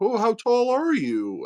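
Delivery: very high, comic, put-on giant voice. Retelling what a man said to him, in a comic giant voice. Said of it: "making it seem like he had a comic giant voice".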